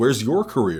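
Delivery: ordinary talk, nothing marked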